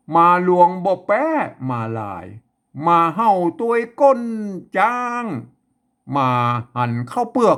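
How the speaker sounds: slow, deliberate northern Thai Chiang Mai accent. Demonstrating the Tai Yuan way of speaking, in a Chiang Mai accent. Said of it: "อันนี้คือสำเนียงไตยวนเชียงใหม่นะครับ".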